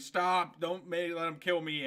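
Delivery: ordinary talk, nothing marked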